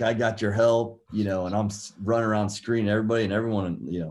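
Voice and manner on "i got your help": loud, acted-out hollering yell. Retelling calls made during a basketball tryout: imitating own past yelling. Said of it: "I'm yelling, like".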